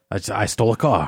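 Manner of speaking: put-on Australian accent. Playing an invented character named Jerry: put-on Australian accent. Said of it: "This is my Australian accent".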